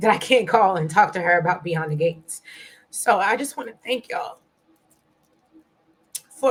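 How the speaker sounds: voice breaking, choked up with emotion. Thanking the audience while missing someone you can't call; choked up. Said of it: "I did not expect this to happen".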